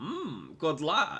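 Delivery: high-pitched character voice with mouth stretched wide. Showing a partner the Scruffson voice for reference, Scruffson voice with stretched mouth. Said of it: "You have to like stretch your mouth out".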